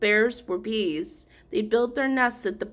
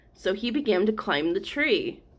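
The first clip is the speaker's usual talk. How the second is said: usual speaking voice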